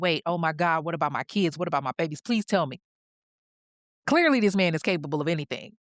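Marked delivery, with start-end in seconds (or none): 0.0-2.8 put-on panicked, pleading voice. Retelling how a woman woke from a coma asking about her kids: imitating someone panicking. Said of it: "now she's panicking".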